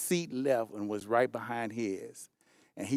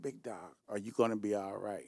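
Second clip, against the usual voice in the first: put-on quiet, hushed, fearful voice; 3 semitones lower, 7 dB quieter than usual. Retelling what a frightened man asked him, imitating a quiet, fearful voice. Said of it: "he kind of got quiet and he said".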